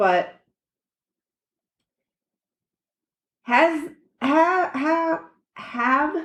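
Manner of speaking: very high, drawn-out stammer on has and have. Mid-rant, tripping over the start of a question, stuttering. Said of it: "I'm like stuttering".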